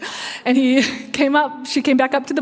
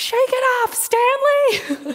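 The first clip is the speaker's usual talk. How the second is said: put-on very high, swooping, drawn-out, all-out scream; 12 semitones higher than usual. Retelling someone cheering from the stands at a football game: imitating someone screaming loudly. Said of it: "she screamed at the top of her lungs".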